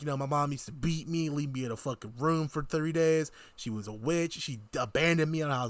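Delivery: normal talking voice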